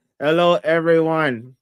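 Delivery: flat, mechanical, robot-like voice. Quoting how Queen Latrice talks: robotic Queen Latrice voice. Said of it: "Like that's how she sounds. She sounds like a robot".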